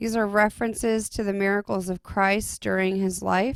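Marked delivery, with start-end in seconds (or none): none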